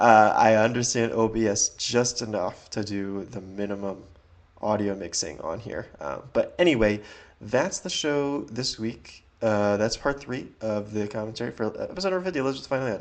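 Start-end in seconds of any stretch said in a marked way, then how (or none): 9.8-13.0 rushed, rattled-off words tumbling out too quick. Announcing the episode being discussed, talking too fast. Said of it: "I said that way too fast".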